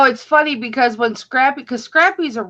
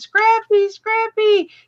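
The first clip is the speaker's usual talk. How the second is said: put-on, very high, shrill, piercing scream; 10 semitones higher than usual. Telling how they searched for their lost pug, retelling screaming a name. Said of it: "when I was screaming".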